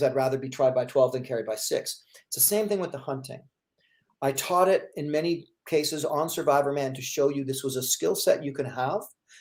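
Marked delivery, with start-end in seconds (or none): none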